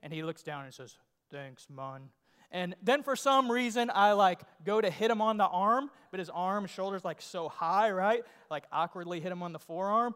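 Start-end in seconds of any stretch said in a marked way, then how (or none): 1.3-2.1 very deep, very soft, hushed, raspy voice. Retelling meeting Shaquille O'Neal, his greeting: deep raspy Shaquille O'Neal voice. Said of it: "deep, kind of raspy voice".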